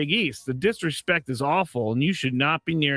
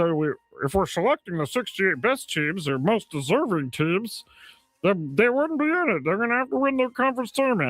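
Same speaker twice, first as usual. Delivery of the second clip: put-on cartoon frog voice; 4 semitones higher than usual. Quoting another person's take during a sports discussion, in a Kermit the Frog voice. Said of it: "he turned into Kermit the Frog there".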